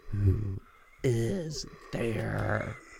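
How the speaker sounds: weird, out-of-breath, creepy phone-creeper voice. On the phone with a caller, weird out-of-breath phone-creeper voice. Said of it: "You sound like one of those phone creepers".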